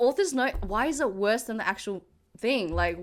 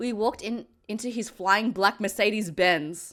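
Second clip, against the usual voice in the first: plain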